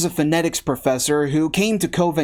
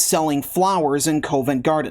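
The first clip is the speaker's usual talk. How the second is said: normal talking voice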